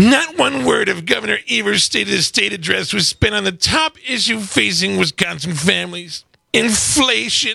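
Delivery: pompous, self-important senator-style voice. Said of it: "I'm gonna do an impression".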